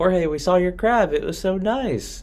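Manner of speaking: high, loud, gushing voice.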